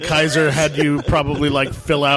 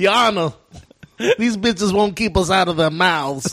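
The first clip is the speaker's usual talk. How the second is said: weird fake Southern accent; 4 semitones higher than usual. Imitating a man addressing a judge, in a weird pseudo-Southern accent. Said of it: "Weird pseudo-Southern accent".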